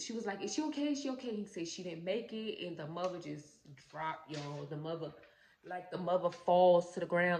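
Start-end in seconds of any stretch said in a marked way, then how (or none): 0.4-1.3 play-acted crying, high-pitched and devastated. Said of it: "crying, like, devastated".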